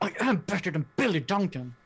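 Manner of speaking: whispering as loudly as possible. Telling a friend in character that you beat billy: loud whisper. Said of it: "be as loud as you can while you're whispering".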